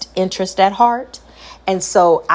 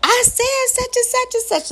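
mock upset voice like yelling, higher. Retelling speaking to a child when upset: imitating own upset voice. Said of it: ""Mom, don't yell at me."".

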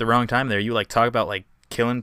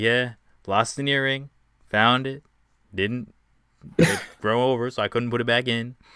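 slow, put-on laid-back, relaxed drawl; 3 dB quieter than usual. Imitating the other speaker chilling on camera: imitating someone chilling. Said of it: "chilling over here, just like".

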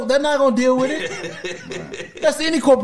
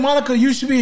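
ordinary delivery

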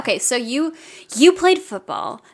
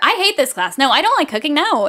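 put-on defensive tone, higher; 4 semitones higher than usual. Retelling what a classmate told the teacher in class, mock-defensive. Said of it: "And he's being all defensive".

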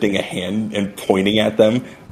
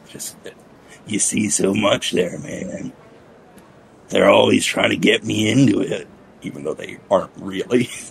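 hissing insect-creature voice with clacking sounds. In a role-play, an insectoid character at his table, hissing insect-creature voice. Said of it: "slow anchor lifter like hisses down at the table with with more clacking of, of, of short mandible against long".

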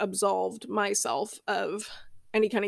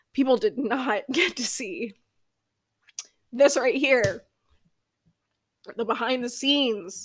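fighting back tears, on the verge of crying; 3 semitones higher than usual. Podcast host opens up about why they started the podcast, holding back tears. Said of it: "I'm trying not to cry".

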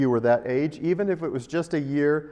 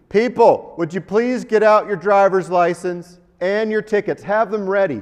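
loud, pitched-up, announcement-style screaming; 5 semitones higher, 8 dB louder than usual. Retelling how an airport agent began screaming at travellers: imitating a TSA agent screaming. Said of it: "he just began screaming".

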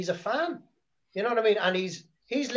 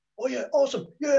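mock eager, excited, pitched-up gushing; 6 semitones higher, 3 dB louder than usual. Imitating Tony Khan approving ideas: imitating Tony Khan getting excited. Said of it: "and he gets excited about it".

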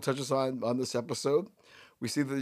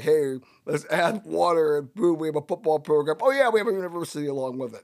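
heavy tongue-in-cheek put-on sarcastic voice; 2 semitones higher, 3 dB louder than usual. Mocking schools that add a football program: put-on sarcastic voice. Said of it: "A little sarcasm there".

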